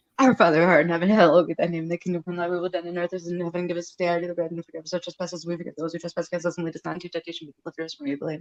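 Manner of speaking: nonstop, very fast auctioneer-style rattling delivery. Showing how the rosary prayers get rushed through: rattled off like an auctioneer. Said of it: "you sound like an auctioneer".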